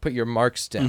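normal talking voice

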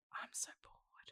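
soft, bored, uninterested whisper.

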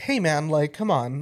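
ordinary talk

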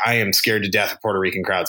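plain

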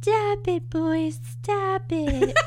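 very drawn-out, slow, high-pitched, motherly scolding. Retelling a scene where a character stops a fistfight, mock-scolding Lola voice. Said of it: "that's my Lola voice".

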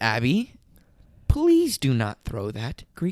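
very calm, even tone. Quoting what they said to someone in that moment, retelling own very calm warning. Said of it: "very calmly, and I made it a point to be very calm".

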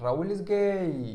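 high, loud jeering yell, one word drawn out. Retelling what he shouted to humiliate the speaker in front of everyone: retelling a shout. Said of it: "gritaba cosas".

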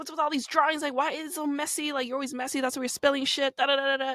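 yelling rant. Acting out a husband going off about mess: imitating a husband yelling. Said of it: "yelling at you".

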